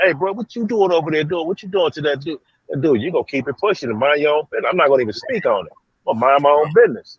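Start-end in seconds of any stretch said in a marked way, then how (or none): 0.0-2.4 high-pitched mocking voice calling out loudly. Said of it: "stop at the cell bars and say".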